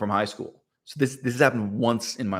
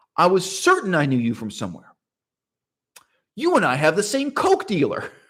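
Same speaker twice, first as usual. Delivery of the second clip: put-on earnest, poker-faced, serious delivery, pitched up; 7 semitones higher, 4 dB louder than usual. Retelling a joke told to a stranger: imitating own serious deadpan delivery. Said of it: "the seriousness of my demeanor".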